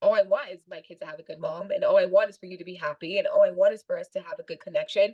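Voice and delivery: ordinary talk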